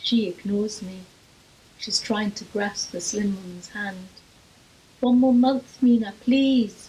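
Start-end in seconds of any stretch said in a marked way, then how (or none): 5.0-6.9 loud, begging, crying voice. A mother grasps a woman's hand and begs her, crying out. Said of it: "she cries".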